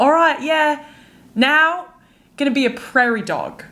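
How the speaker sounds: terrible, clumsy fake Australian accent. Describing a teacher who chose animals, the speaker imitates him in a bad australian accent. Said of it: "That was a terrible accent".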